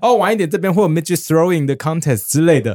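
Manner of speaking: acted loud speaking. Retelling what someone announced in a bar: imitating someone speaking loudly. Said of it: "还讲得很大声说".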